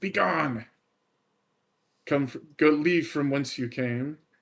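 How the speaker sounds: snarled, spat-out, angry voice. Voicing a vampire spawn telling a player to leave: spitting the words angrily. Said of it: "She just looks back at you and spits".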